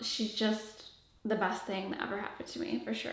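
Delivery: soft voice catching, choking up, on the edge of tears. Answering interview questions about a baby, on the verge of tears. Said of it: "I'm gonna cry".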